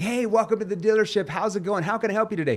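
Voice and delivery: very high, pushy, overexcited car-salesman voice. Showing how trainees greet people at a dealership, mock overexcited salesperson tone. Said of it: "you don't want to come across too excited, ... like the typical like used car salesperson".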